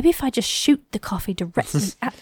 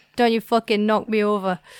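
put-on Scottish accent. Voicing a robot dog said to have a Scottish voice: put-on Scottish accent. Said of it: "the one that's got the Scottish voice".

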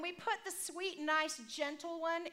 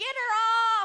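very loud, high shriek, "her" drawn out; 7 semitones higher, 12 dB louder than usual. Retelling a car ride, the parent acts out their son in the back seat, retelling a scream. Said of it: "He's screaming".

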